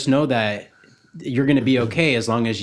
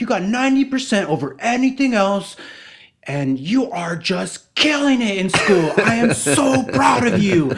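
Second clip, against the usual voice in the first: put-on yell, higher; 10 semitones higher, 3 dB louder than usual. Retelling a viral video of a dad praising his son's grade: imitating a dad yelling. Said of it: "yelling at him for doing such a great job".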